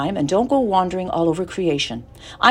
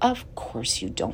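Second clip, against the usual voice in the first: low, soothing, comforting, reassuring tone; 7 semitones lower, 10 dB quieter than usual. Narrator reads a character reassuring another who fears dying, comforting voice. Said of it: "said Charlotte in a comforting voice".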